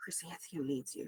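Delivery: low, breathy whisper. Voicing a character who approaches the players: low whisper. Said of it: "in a low whisper, he's like".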